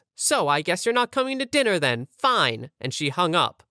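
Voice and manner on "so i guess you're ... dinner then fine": mock annoyed, pissed-off, sassy tone. Retelling a woman's reply on the phone, imitating a pissed-off, sassy voice. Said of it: "in a pissed off, sassy voice".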